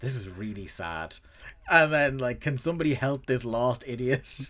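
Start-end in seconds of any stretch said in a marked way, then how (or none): 0.0-1.2 mutter under breath, much lower, quieter. Retelling a story, acting out a man muttering under his breath. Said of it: "Tony is just muttering under his breath".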